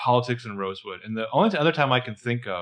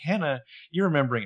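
put-on, very condescending, patronizing tone; 4 semitones higher than usual. Voicing Arya answering Hannah's question: acting out condescending Arya. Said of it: "kind of condescendingly, very Arya condescendingly".

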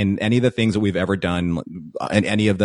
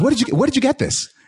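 high, squeaky, excited voice. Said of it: "He goes".

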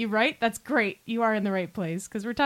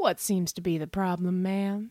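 slow, drawled, stretched-out words; 4 semitones lower, 3 dB quieter than usual. An exterminator turns back to the neighbor and smiles, then speaks in a drawl. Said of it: "he drawled".

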